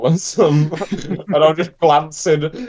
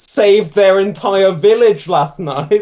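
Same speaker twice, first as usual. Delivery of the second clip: calling out loudly from a distance; 4 semitones higher, 3 dB louder than usual. Calling over to the bartender in character: calling out to the bartender. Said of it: "call over to the, to the bartender".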